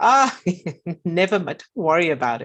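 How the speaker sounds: laughing while speaking. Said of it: "your grandmother laughs and goes".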